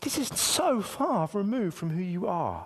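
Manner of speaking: slow, gentle, bewildered, loving fatherly voice. Retelling his words, imitating a puzzled loving father. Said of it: "scratching his head in a really sort of loving father".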